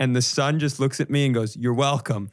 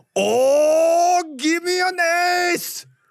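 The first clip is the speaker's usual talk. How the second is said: very high, very slow, very loud cartoon samurai holler; 4 dB louder than usual. Retelling an old guy at a casino blackjack table asking for an ace, very loud cartoon samurai voice. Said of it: "as loud as I've ever heard a person speak in a casino".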